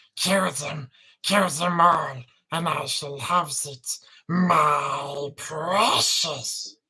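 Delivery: very loud bellowing creature voice with my stretched out. Trying to get it right, the speaker does a Gollum voice. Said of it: "That's the Gollum Gollum voice".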